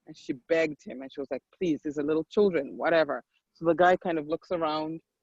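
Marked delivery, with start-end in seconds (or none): none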